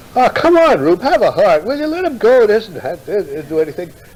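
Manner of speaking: loud, very high, swooping, staged pleading tone. Retelling a staged exchange outside a closed door, speaking in a loud voice. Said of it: "I talked in a loud voice".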